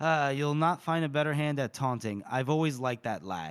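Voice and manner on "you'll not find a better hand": plain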